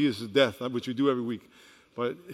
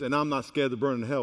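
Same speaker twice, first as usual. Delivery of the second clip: ordinary talk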